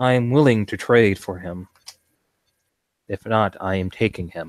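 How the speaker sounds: firm, unyielding, stern and severe tone. Confronting the beast that has your ghoul, speak in a stern tone. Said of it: "in a stern tone".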